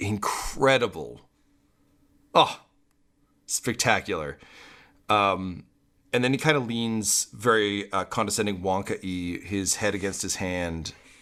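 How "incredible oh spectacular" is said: laughing through stunned, shocked delight. Narrating a character's reaction, the speaker voices him with a shocked, delighted laugh. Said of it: "in shock and delight laugh".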